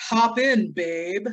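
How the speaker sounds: creepy, leering come-on voice. Retelling a film scene where a truck driver offers a ride: imitating a creepy truck driver. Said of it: "I was so creeped out by the driver going".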